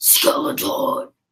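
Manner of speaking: spooky, eerie put-on voice. Setting down a skeleton horse toy, name it in a scary, spooky voice. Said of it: "That's my scary, spooky voice".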